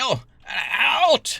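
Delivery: very high-pitched, shrill monster yelling. A game master voicing a figure who orders the party out, shouting. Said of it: "he starts shouting".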